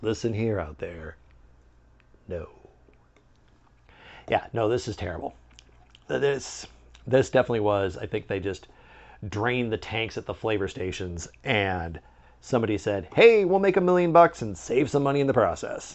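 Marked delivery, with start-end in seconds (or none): 0.0-5.3 grave, earnest, low, serious voice. Reviewing the last of three flavors for listeners, in a serious voice. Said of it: "Do you hear me using my serious voice?".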